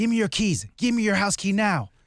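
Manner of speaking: mock insistent, high voice. Retelling what he said before they left with the bed, quoting his demand. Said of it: "he started before we left".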